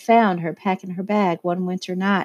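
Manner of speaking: plain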